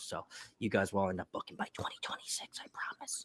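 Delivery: breathy, hushed whisper, very quiet, barely voiced. Telling listeners the cruise date and promising they'll book, whispering. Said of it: "I don't know why I'm whispering".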